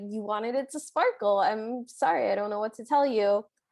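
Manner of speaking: ordinary talk, nothing marked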